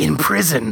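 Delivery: hushed, softly whispered. Recounting a scene where a man answers a family's question, whispering. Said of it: "And he whispers".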